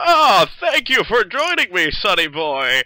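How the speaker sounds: put-on loud old-timer voice. Game master voicing the old person by the fireplace greeting the player, old man's voice. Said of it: "When you get close to the old person by the fireplace".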